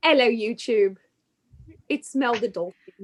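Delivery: put-on speaking with British accent. Speaking as Mel the Dolphin to YouTube viewers, British accent. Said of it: "I'm British for some reason".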